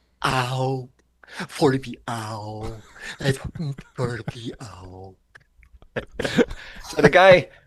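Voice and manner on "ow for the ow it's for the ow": soft, very slow, dopey simpleton voice. Retelling how a man whacked his elbow, imitating his dumb voice. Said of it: "he just came up with this dumb voice going".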